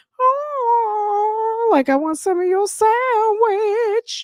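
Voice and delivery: slow, very high begging voice, long drawn-out "oh". Voicing Portia begging for some of the speaker's sandwich: imitating Portia begging for food. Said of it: "she is like".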